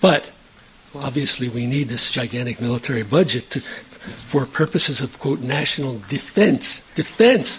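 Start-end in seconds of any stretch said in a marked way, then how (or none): 6.1-7.6 heavy stress on the word defense. Discussing the military budget, the speaker puts stress on defense. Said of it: "I put the stress on the word defense".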